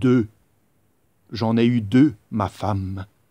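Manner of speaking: deep, loud, proud king voice, showing off. Storyteller voicing Louis XVI as he brandishes two hares: deep voice for Louis XVI. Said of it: "une voix grave pour Louis seize bien sûr".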